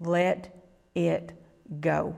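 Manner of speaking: calm, slow, unhurried voice. Recounting hearing a voice a second time, retelling it calmer and slower. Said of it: "calmer and slower".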